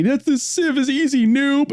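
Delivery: mock very high, drawn-out sobbing whine. Describing a meme character who complains: mock crying. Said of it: "the guy crying is all like".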